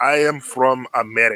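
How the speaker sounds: heavy, thick, terrible put-on German accent. Retelling a missionary kid's answer to where he's from, in a thick German accent. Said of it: "in the thickest German accent I can possibly hear".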